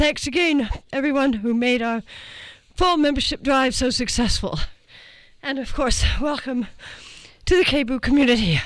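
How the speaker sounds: short of breath, winded. Radio host back from running to get something for today's guest, out of breath. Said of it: "I'm out of breath".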